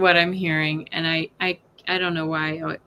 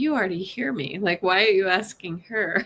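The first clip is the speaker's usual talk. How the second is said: imitated laughing while speaking. Relaying what a woman said while cracking up at a question, retelling while laughing. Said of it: "she's kind of cracking up because she's like".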